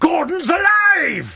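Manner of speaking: very slow shouted bellow. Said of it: "perform his famous catchphrase".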